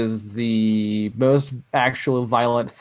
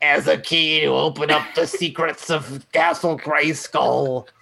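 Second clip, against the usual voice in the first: snide, sneering, gloating cartoon villain voice; 4 semitones higher than usual. Pitching a villain's line in a scene, doing the Mark Hamill Skeletor voice. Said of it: "And it's like".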